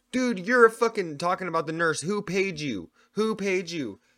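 mock yelling and screaming, high-pitched. Retelling how a suspected paid shill yelled, imitating a man yelling. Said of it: "he was fucking also yelling and screaming like".

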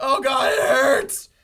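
very loud, high, very slow, drawn-out howling scream. Retelling a story about a man with diarrhea: acting out a scream. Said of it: "he's screaming like".

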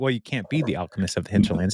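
plain

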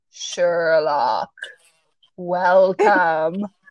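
ponderous, slow, low-pitched tree voice, unhurried. Reading a story aloud, the tree greets Sherlock; ponderous, slow Treebeard voice. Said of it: "The voice was ponderous and slow".

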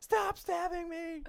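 mock hysterical screaming. Acting out a panicked patient for a joke: mock hysterical screaming. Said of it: "scream hysterically".

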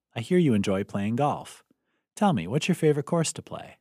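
ordinary delivery

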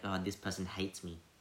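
ordinary talk, nothing marked

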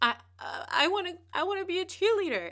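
play-acted very high, choked-up, tearful sobbing stammer. Retelling telling a father about wanting to be a cheerleader, imitating own past crying. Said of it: "my sister's crying because I'm crying".

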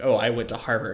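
ordinary talk, nothing marked

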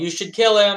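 high-pitched yell, shouted loudly to carry far. A player in a tabletop game has their character yell through a door, yelling. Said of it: "I just yell".

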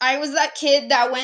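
ordinary delivery

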